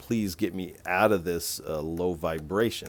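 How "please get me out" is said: usual speaking voice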